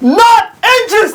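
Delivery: very high, blunt, shrill full-voice shout at top of lungs. Retelling a girl at a party rejecting him: imitating a girl shouting. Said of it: "She said at the top of her voice".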